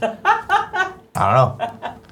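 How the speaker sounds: very high, slow, drawn-out whine.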